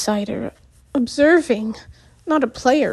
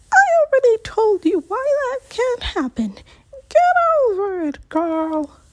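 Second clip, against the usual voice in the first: drawling, very high-pitched and stretched; 11 semitones higher than usual. Reading a character's reply in a story: high-pitched drawl. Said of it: "Mystique says in a high-pitched drawl".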